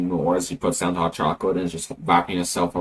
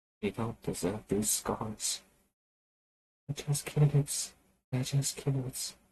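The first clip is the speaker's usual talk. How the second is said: barely audible, very quiet, high-pitched mumble; 6 semitones higher, 10 dB quieter than usual. Calmed down by a party member, she speaks as she settles, mumbling. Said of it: "she mumbles".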